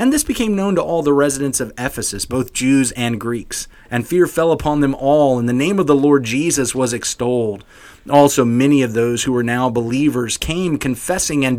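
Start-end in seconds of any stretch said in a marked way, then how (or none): none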